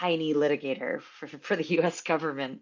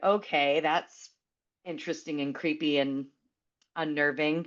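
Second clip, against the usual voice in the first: ordinary talk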